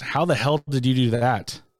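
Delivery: mock cross yet proud, surprised disbelief. Retelling a dad's reaction to his daughter's project: imitating half-mad, half-surprised, half-proud. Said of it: "half mad, but half surprised, half proud".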